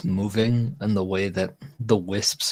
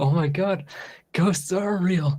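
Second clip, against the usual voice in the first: high, wavering voice on the verge of crying; 9 semitones higher than usual. Retelling a ghostly knock, imitating own voice on the verge of tears. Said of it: "That's actually what I sounded like".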